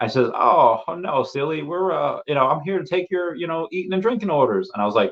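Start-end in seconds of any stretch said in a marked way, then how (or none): 0.3-4.7 put-on high Southern belle accent. Retelling what the lady taking their orders said, imitating a Southern belle accent. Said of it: "she had this like Southern Belle accent".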